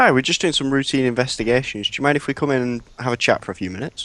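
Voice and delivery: pleasant polite friendly voice. In a game, a player character greets an elderly woman at her door, nice happy face. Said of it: "I put my put my nice happy face on".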